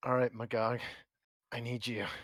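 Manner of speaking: whispering quietly. Voicing a character calling on an inner power: whispering to himself. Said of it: "you hear him whispering to himself".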